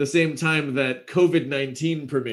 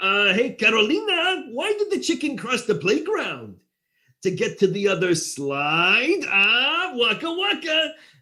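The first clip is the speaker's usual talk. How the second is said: pitch raised with a swinging tune; 9 semitones higher than usual. Running through a series of cartoon and Muppet voice impressions, Fozzie Bear voice. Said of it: "and then there's Fozzie".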